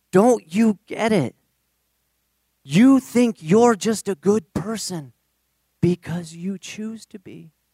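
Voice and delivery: put-on breathless speech. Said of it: "He's out of breath".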